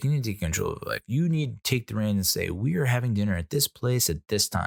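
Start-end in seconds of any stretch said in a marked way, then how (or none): none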